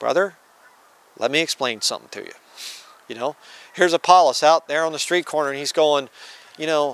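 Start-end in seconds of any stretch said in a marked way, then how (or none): 0.0-2.3 gentle, humble, meek and quiet. Showing how to correct a man in doctrinal error: meek and quiet. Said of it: "in a meek and quiet spirit and you say".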